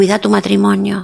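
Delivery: ordinary delivery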